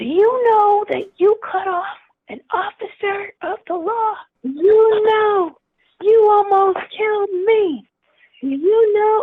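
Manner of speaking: high, loud yelling and screaming rant. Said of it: "this motorcycle cop is yelling and screaming".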